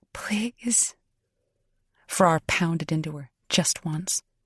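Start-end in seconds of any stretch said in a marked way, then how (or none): 0.1-0.9 soft, breathy, husky pleading voice. Reading a story aloud, a character repeats her plea: husky voice. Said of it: "Maisie repeated in a husky voice".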